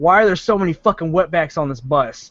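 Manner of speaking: imitated loud delivery. Retelling what an obnoxious kid on the bus said, retelling a loud remark. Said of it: "not quietly".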